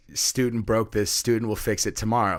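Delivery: ordinary delivery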